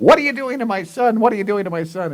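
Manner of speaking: very high-pitched screaming. Retelling how a mother came across a park: imitating mother screaming. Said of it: "my mother comes screaming from across the park".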